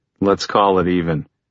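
ordinary delivery

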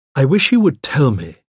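ordinary delivery, nothing marked

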